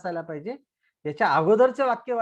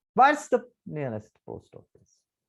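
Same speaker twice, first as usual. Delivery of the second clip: falling intonation on post office. Reading an example question, voice going down at the end; voice falls on "post office". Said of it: "when I will read the last word or last group of word post office, then my voice should be down".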